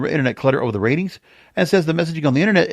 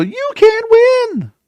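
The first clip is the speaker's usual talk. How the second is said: shrill, loud film character voice; 6 dB louder than usual. Redoing a line from Rocky three: Talia Shire voice from Rocky. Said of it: "I am doing that voice exactly the way that Talia Shire did it".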